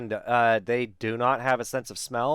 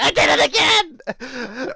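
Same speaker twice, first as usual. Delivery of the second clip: very slow, high, drawn-out, mad exasperated outburst; 14 semitones higher, 8 dB louder than usual. Recalling the listener's earlier reaction, imitating the listener getting mad. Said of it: "When you got all mad".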